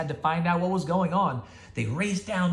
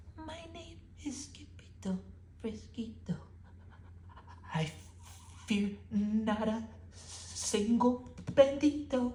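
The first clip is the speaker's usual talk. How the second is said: very soft, very slow, drawn-out whisper; 7 semitones higher, 9 dB quieter than usual. Narrator reading a sword fighter's self-introduction, very soft voice. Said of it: "in a muy muy soft voice".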